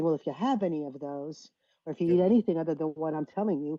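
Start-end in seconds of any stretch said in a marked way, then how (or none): none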